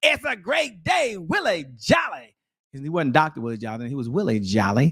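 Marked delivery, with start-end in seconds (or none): 0.0-2.3 loud, slow, booming delivery. Caller retells a phone call being answered, in booming Willie Jolly voice. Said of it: "I hear this booming voice".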